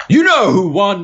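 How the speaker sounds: play-acted very high, loud, boastful triumphant yell. Recounting what they yelled after winning a round: retelling a proud yell. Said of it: "I yelled".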